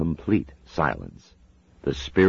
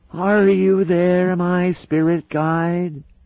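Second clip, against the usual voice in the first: very high, wavering, quavering medium's voice; 6 dB louder than usual. A woman irritated at being upstaged calls out to her spirit guide: high-pitched, quavery voice. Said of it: "in a high-pitched, quavery voice".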